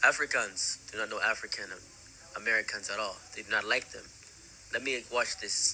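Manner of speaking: normal talking voice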